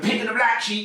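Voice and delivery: play-acted, high-pitched, shouted scream. Retelling how he used to sound on the mic: imitating his own screaming on the mic. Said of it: "like I'm screaming and shouting on the mic".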